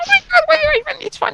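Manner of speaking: squeaky put-on voice. Mimicking how a woman sounds, imitating Movie Slate's squeaky voice. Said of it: "She sounds with a very squeaky voice".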